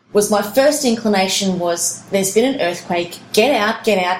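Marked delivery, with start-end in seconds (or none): none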